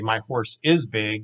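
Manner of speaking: usual speaking voice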